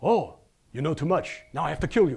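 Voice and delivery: put-on Russian-accented English. Retelling what an archaeologist said when told they read his paper, russian accent. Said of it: "so he speaks with Russian accent".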